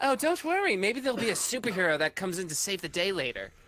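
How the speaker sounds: character voice with a smile. Narrating a game, voicing Lucy as she leans in, smiling as she speaks. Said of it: "[name] just smiles and leans in and says".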